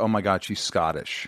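normal talking voice

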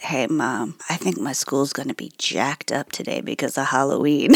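play-acted drowsy just-woken voice, very low and soft. Mom retelling her daughter rolling over and talking to her, imitating Luna's sleepy voice. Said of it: "in the sleepiest voice goes".

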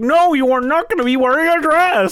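high stern scolding voice.

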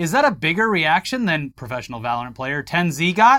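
ordinary talk, nothing marked

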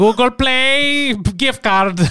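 Indian accent. Joking that the twang sounds like an Indian impression, doing an Indian accent impression. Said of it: "Like that's what it sounds like".

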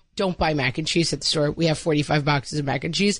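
ordinary delivery

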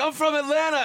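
high, loud, puffed-up mocking voice.

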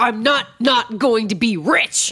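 put-on very slow, high scream through clenched teeth. Retelling a moment from episode two: imitating a scream through gritted teeth. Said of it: "screams through gritted teeth".

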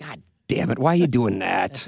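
mock old person voice. Repeating the other speaker's outburst back, imitating a senior voice. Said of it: "That's kind of your senior voice".

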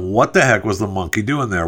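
plain

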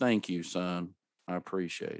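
put-on gloomy, flat voice. Retelling a birthday phone call, the speaker quotes the dad's reply, imitating a flat, depressed tone. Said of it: "how depressing does that sound?".

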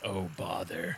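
very low, very soft, hushed half-whisper. Speaking as a character muttering to himself, half-whispering to himself. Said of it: "Kyborg whispers to himself".

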